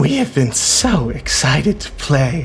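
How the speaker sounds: loud, projected whisper. Game master voicing an attacker whose dagger is in a player, whispering. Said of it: "he whispers".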